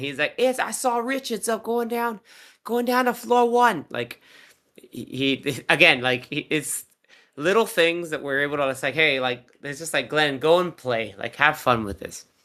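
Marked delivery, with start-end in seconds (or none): 0.4-3.8 put-on Boston accent, very high pitch. Act out what a man says when he does his accent, in a Boston accent. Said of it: "he also does his Boston accent".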